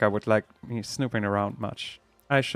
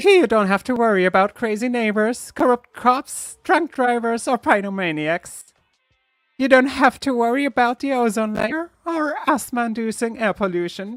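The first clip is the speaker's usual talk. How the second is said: very high-pitched character voice; 13 semitones higher, 4 dB louder than usual. Reading game dialogue aloud, voicing the announcer: Monokuma voice. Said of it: "I have to do the Monokuma voice again".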